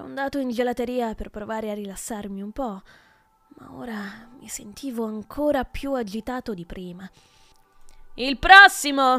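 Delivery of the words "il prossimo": very loud shout. A clerk behind the counter in a gelato shop calls the next customer, shouted. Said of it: "urlò un commesso barbuto".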